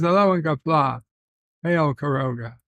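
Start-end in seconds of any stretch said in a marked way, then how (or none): none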